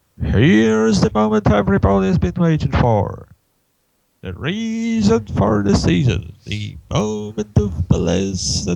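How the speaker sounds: arena announcer voice, building excitement. Reading a comic aloud, voicing the announcer at a rally: announcer voice. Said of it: "it's an announcer, not a narrator".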